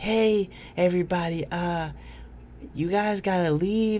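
small, soft, gentle, high voice. Retelling how she told everybody they had to leave, little soft voice. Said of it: "in her little soft voice".

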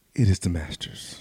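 hushed, whispered golf commentator voice. Opening a podcast episode, doing a Jim Nantz impression. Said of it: "Is that your Jim Nance impression?".

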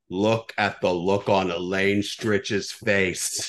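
slow, raspy, smoker-like voice taking its time. Retelling what someone behind them in the theater said, in a smoker's voice. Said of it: "a smoker's voice goes".

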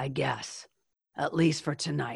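put-on tough voice. Retelling a woman's reply about being his family, imitating her tough voice. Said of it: "in her tough voice".

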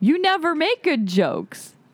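playful contempt, very drawn out, slow and high. Acting out a marriage pattern for the other speaker: acting contemptuous. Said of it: "And that's contempt".

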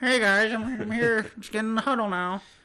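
terrible, very high, squeaky puppet-frog voice. Talking about a quarterback's interviews, a speaker does a terrible Kermit the Frog impression. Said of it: "That was a terrible Kermit impression".

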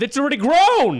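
very high loud yell. Making a point in a group argument: yelling. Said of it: "Why are you yelling at me?".

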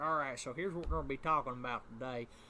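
fake hillbilly voice. Describing a YouTuber who sounds all redneck: imitating a redneck YouTuber. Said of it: "He sounds like".

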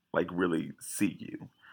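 plain

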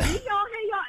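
very high, loud, rowdy holler, acted out. Retelling own entrance to the show, imitating own loud rowdy greeting. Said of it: "I be all loud and rowdy when I come in".

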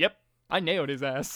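put-on, mock-solemn delivery. Retelling a tv character's line after he pauses a recording, retelling a solemn line. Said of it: "he just solemnly says".

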